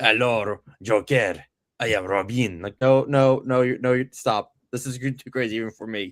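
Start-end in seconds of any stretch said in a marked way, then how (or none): 0.0-2.6 put-on French accent, slow. Retelling a comic scene, the speaker voices Robin greeting the Joker in a French Robin voice. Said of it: "it's French Robin".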